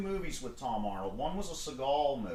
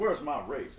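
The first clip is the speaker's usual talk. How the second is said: ordinary talk, nothing marked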